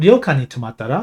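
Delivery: tomattara lifted in pitch on its final syllable. Showing a casual japanese sentence: rise at end of tomattara. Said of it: "And you have that that rising uh, at the end".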